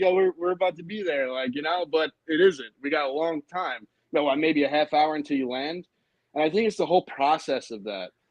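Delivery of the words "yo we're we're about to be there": eager, excited, pitched-up voice. Describing a plane about to land, acting out excitement. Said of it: "you get all excited".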